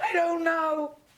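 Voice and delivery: weepy, high, tearful voice, spoken through tears. Apologizing while the other asks why she cries: crying. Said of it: "what are you crying for?".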